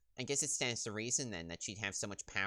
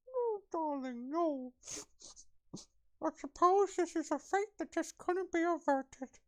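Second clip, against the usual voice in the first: very high, shrill, awful put-on old-woman voice; 6 dB louder than usual. Trying out a voice for a game character: awful put-on voice. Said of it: "That's an awful voice".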